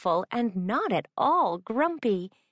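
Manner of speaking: plain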